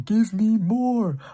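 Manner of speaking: high, slow, loud excited cry. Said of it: "My reaction to seeing this character".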